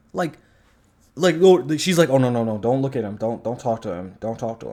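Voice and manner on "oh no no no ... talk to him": put-on mortified embarrassment, fretful protesting tone. Retelling a scene where a dad shows up: Yelena embarrassed by her dad. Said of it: "Yelena acts like it's her dad embarrassing her".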